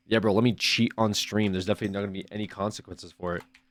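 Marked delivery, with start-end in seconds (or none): none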